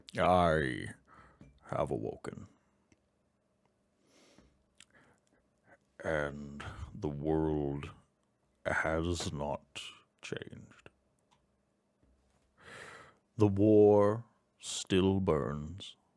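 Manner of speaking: slow, stony, gravelly, grinding, ground-out voice. Voicing a gargoyle musing to himself: slow grinding granite voice. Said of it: "Speaking slowly, voice like grinding granite".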